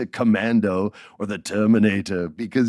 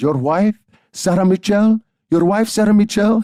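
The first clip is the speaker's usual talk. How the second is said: put-on very high, loud, thick Puerto Rican accent; 10 semitones higher, 5 dB louder than usual. Retelling a phone call from his grandmother, imitating her heavy Puerto Rican accent. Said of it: "she has this heavy Puerto Rican accent".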